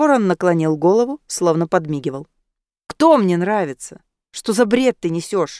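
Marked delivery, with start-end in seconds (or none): 2.9-5.6 voice growing heated, temper starting to flare. A young man answering a talking raven that teased him, getting heated. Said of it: "начал распаляться Киан".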